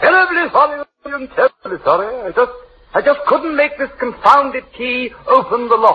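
put-on drunk, slurred delivery with a British accent. Apologizing for waking William at three in the morning: drunk, with a British accent. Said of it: "coming home in this state".

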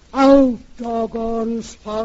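hollow, empty stage voice. A woman retells performing a sleepwalking scene in a church play, in a hollow voice. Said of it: "I says in a kind of hollow voice".

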